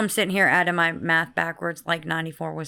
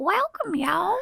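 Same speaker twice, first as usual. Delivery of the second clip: very high, put-on granny voice; 14 semitones higher than usual. Greeting everyone at the start, in the granny welcome voice. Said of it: "I love it when you do the granny welcome".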